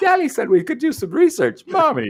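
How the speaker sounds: put-on very high, swooping, woman-voiced little boy voice. Joking about a woman dubbing a boy in House by the Cemetery: imitating a woman dubbing a boy. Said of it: "Let's get a woman to do his voice".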